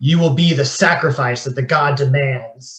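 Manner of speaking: loud shouted voice. Voicing a masked figure charging with a knife: shouting a threat. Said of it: "They shout at you".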